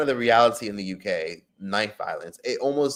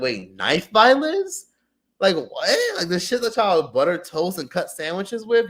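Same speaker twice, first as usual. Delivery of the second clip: put-on amused, laughing disbelief, higher; 8 semitones higher than usual. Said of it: "I laughed and I was like".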